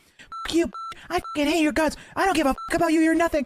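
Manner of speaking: mock furious shouting. Mimicking a woman from the group chat yelling at Fupa, imitating angry yelling. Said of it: "you just yelling like at Fupa".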